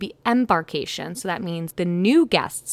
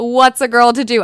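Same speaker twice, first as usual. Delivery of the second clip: put-on very loud, high, heavy Scottish accent; 5 semitones higher, 10 dB louder than usual. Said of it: "imagine that in her thick Scottish accent".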